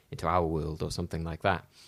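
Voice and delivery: ordinary talk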